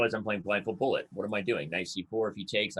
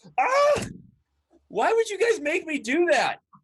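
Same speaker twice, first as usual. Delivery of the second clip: very high, swooping, exasperated, frustrated yelling; 7 dB louder than usual. Out of time in a chess game, you yell at the guys, frustrated yelling. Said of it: "you're yelling at me".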